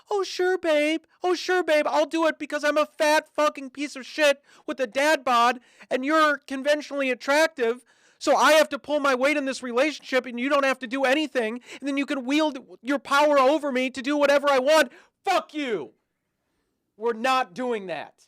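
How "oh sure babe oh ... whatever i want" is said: eager meek voice, high and raised. Mocking a boyfriend who does whatever he's told: mocking imitation of meek boyfriend. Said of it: "he could do whatever you want like a little lapdog".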